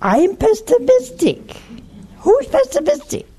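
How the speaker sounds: very high, swooping, mock indignant tone.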